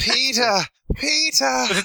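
shrill, very high screamed cries of bliss. Discussing an episode, speaker imitates a character's aunt screaming: imitating a scream. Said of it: "screaming her bliss".

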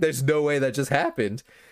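mock shocked disbelief. Retelling a scene, imitating a character who is aghast. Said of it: "she's, like, aghast".

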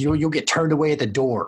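loud hollering, yelling. Voicing a character yelling at someone as they walk away, yelling. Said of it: "just yelling at you".

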